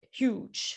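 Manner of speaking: silly, breathy, whispered put-on voice on "huge". Calling something huge for emphasis, say 'huge' in a funny voice. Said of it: "I had to say it in a funny voice".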